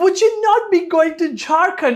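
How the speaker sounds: affected, high-pitched, fake put-on English accent. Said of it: "इस तरीके के फेक एक्सेंट में आप बातें करो".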